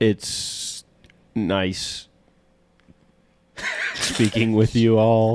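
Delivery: very slow, drawn-out delivery. Signing off the episode on purpose with a very slow, drawn-out delivery. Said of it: "you take, like, fifteen minutes to say a word".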